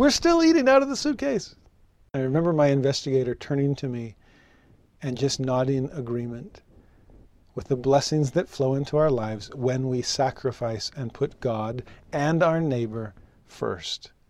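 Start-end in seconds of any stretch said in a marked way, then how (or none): 0.0-1.5 laughing delivery with very high voice. Recounting what a man said up front, retelling his laughing remark. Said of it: "He was just up there laughing".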